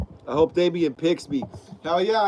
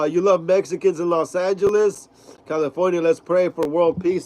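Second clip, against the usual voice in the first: usual speaking voice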